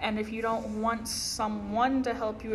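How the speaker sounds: ordinary delivery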